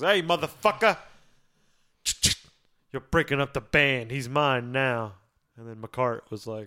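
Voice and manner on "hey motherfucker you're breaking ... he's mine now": put-on Brooklyn accent, tough, confrontational and in-your-face. Retelling someone getting in people's faces about the band, real brooklyn about it. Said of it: "Like real Brooklyn about it".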